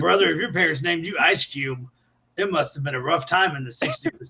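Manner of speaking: normal talking voice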